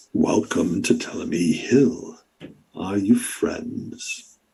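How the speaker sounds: breathy, creaky voice like bending wet timber. A figure in the story greets the group, in a creaking wet-wood voice. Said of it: "you hear this creaking sort of voice come out of it, like wet wood sort of bending".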